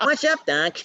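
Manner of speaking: goofy delivery, high-pitched and loud. Goofing around on set: Bugs Bunny voice. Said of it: "Bugs Bunny-ish".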